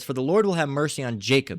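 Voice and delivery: ordinary delivery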